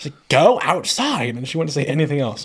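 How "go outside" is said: put-on blunt, loud two-word yell. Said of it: "some lady in the hallway yells at me".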